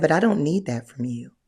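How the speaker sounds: put-on sweetest, gentle, soft, low voice. Retelling what a masculine man told the speaker, imitating his sweetest voice. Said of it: "he told me in the sweetest voice".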